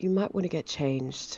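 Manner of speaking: quiet, soft, discreet, close voice. Hand on the squire's shoulder, a character speaks to him; speaking quietly. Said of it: "say quietly".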